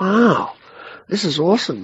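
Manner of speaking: high, excited wow.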